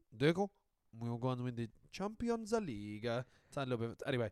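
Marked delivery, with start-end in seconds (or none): 0.2-3.1 slight put-on Italian accent sliding in. Teasing the other speaker's impression, speaker mimics it as a mock Italian Mourinho impression. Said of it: "he turned a bit Italian. He was like".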